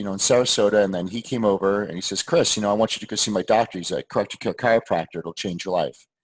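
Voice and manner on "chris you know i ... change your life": mock offhand, easygoing, very nonchalant delivery. Retelling how someone urged a visit to his chiropractor: imitating a nonchalant tone. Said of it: "he said it just the way I said it, like, very nonchalant".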